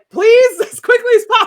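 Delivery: a little panicky, high and loud. Game master voicing a Beastmaster escorting someone out, a little panicky. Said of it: "It's just kind of a little panicky".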